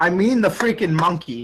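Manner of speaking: ordinary talk, nothing marked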